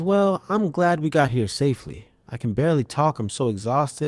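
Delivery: ordinary talk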